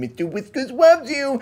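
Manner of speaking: squeaky, very high-pitched cartoonish cat voice. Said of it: "you literally have to say it like that".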